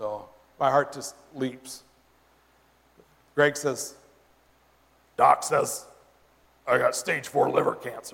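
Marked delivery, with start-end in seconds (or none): 5.2-8.1 put-on gravelly voice. Retelling what Greg said to them, imitating Greg's gravelly voice. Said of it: "he has this real, real gravelly voice".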